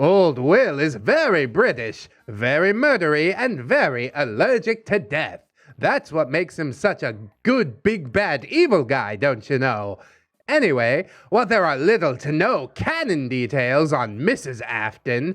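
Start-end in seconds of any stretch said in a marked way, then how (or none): 0.0-10.0 put-on old-timey informational announcer voice. Explaining Five Nights at Freddy's lore, in an old-timey informational voice. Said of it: "doing like an old timey informational voice".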